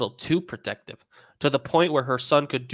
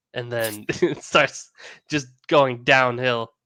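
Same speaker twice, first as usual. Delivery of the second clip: plain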